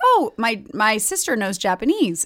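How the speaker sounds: ordinary talk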